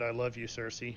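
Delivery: ordinary talk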